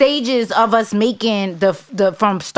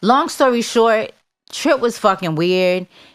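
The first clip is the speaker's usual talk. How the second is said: ordinary talk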